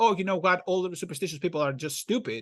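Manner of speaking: usual speaking voice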